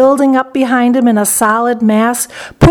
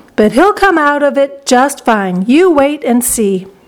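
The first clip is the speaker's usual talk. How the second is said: plain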